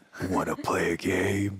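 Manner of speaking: deep robotic villain voice. Quiz segment, greeting the two guests in the Saw movie villain voice. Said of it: "You just sound like a Transformer right now".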